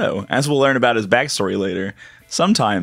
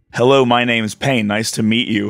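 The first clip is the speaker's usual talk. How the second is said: flat, expressionless delivery. Retelling a game scene where Pain greets someone: imitating Pain, stone-faced. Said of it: "stone-facedly is like".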